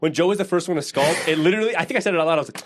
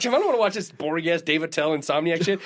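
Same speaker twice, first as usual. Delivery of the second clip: ordinary talk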